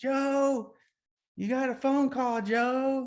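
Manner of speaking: sitcom-style announcing voice. Speaker retells calling for his grandpa: sitcom-style phone call voice. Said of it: "like in like in some sitcom or something".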